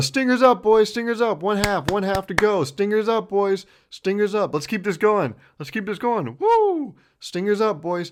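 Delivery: acted, high, rowdy, hyped cheer, repeated over and over. Retelling an adult man cheering at a team, imitating a cheering yell. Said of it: "he's yelling, he's cheering".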